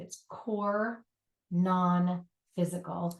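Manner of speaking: slow, deliberate delivery, each word spelled out separately. Speaker repeating a term for listeners, saying it slowly. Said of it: "in case I'm not saying that slow enough".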